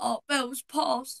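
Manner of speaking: put-on voice on the edge of crying. Retelling how Daddy phoned with the news: imitating someone about to cry. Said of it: "he sounded like he was about to cry".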